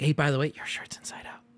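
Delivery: whispered, hushed, breathy confiding aside. Retelling how a store employee pointed out his shirt: imitating a quiet remark. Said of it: "just between her".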